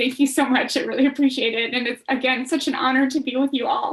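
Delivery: crying while talking. Thanking the others after being congratulated on an award, crying while talking. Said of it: "I'm sorry for crying".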